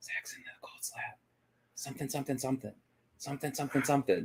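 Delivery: very quiet, high-pitched, mumbled whisper. Retelling what was heard while trying to record: imitating someone whispering. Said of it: "all I'm gonna hear in this E V P is just whispers".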